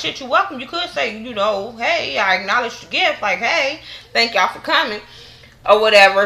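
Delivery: scornful, sarcastic retort, acted out. Retelling a cast member's reply about a gift: imitating a sarcastic reply.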